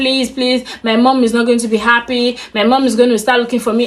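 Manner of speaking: mock frantic, desperate pleading tone. Retelling begging an attacker to let her go: imitating desperate begging. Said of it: "I was just begging and begging".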